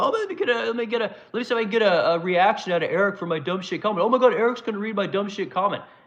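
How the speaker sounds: high, scornful, derisive voice. Mocking the chat commenters who want a reaction: mocking imitation of commenters. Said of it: "no one wants to listen to you guys comment".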